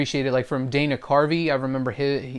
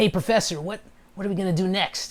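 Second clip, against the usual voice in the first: chill, laid-back voice, pitched a touch higher; 5 semitones higher than usual. Explaining how he does Fry's voice, slipping into a chill Fry voice. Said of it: "just kind of chill kind of voice".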